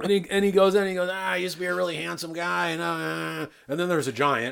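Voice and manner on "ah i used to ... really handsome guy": creaky, hacky bad nightclub comic delivery. Retelling a movie character's dumb lines: imitating a bad nightclub comic. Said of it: "he's like a, a bad nightclub comic".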